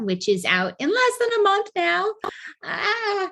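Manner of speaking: excited, high and varied pitch.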